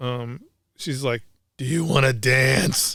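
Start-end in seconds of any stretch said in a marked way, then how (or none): 1.6-3.0 raspiest heavy smoker's voice, rough as possible. Retelling a woman asking him to dance while he ate, raspiest smoker voice. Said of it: "Smoker voice possible".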